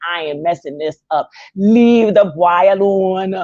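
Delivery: put-on speaking in Jamaican accent. Voicing what a man in the show is thinking: put-on jamaican accent. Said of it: "in my Jamaican accent".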